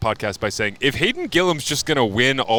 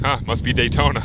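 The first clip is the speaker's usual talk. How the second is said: plain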